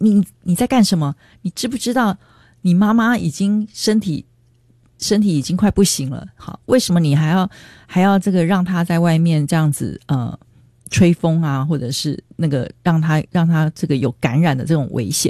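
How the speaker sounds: usual speaking voice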